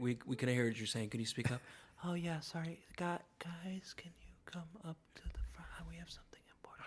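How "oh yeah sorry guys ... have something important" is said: whispered, almost inaudible, barely audible voice. Retelling what Mary said after being asked to speak up, imitating Mary's very quiet voice. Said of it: "she'll be great in A S M R".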